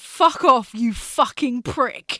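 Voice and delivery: very slow, deliberate, drawn-out, angry swearing. Speaker retells a player swearing at a German opponent after a tackle, imitating an angry curse. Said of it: "she's just gone".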